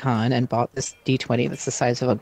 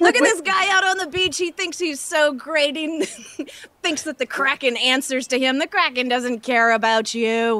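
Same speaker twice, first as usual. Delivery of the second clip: shouting, yelling; 13 semitones higher than usual. Mocking a cultist on the beach in character: shouting at him. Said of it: "I'm gonna start shouting about how this guy".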